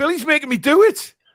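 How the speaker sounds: very high, guilty, pleading schoolkid voice. Blaming a friend for making them do it: mock schoolkid in the headmaster's office. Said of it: "I sounded like a school kid in the headmaster's office".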